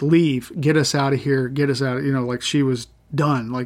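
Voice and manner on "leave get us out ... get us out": ordinary talk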